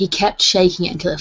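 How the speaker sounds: ordinary delivery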